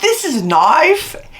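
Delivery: put-on clumsy, high Australian accent. Retelling a movie scene with a street thug: bad Crocodile Dundee impression. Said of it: "I do a horrible Australian accent".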